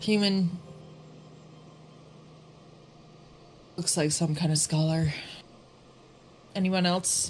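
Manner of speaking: quiet muttering under the breath. Narrating a role-play scene, voicing a woman searching the room, muttering to herself. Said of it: "just kind of to herself".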